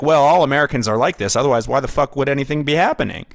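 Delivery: put-on smug attitude. Mimicking a smug Canadian view of Americans: imitating a smug attitude. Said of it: "there is that smugness of".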